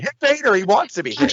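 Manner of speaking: very high-pitched shrieking yell, acted. Recalling watching the Starrcade 93 match with Flair, urging him on; retelling own yelling. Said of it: "Like I'm yelling at him".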